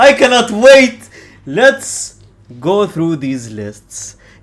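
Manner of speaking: sarcastic, insincere, over-eager fake enthusiasm. Opening a nominee list video, then admitting it: sarcastic excitement. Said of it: "I was just sarcastic".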